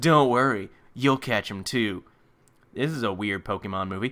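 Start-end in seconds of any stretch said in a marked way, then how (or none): 0.0-2.0 mock-creepy delivery. Recapping a Pokemon movie, acting out a character's line with a mock-creepy delivery. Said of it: "he creepily says".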